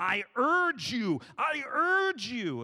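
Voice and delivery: frantic, very loud, very slow. Retelling how pastors preached this verse: imitating a frantic pastor. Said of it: "in their most frantic tone".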